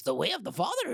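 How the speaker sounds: put-on small, wise, old creature voice. Host introducing a guest's new book title, saying it in Yoda voice. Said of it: "almost done with a Yoda voice".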